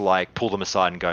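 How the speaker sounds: ordinary talk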